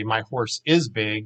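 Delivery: ordinary talk, nothing marked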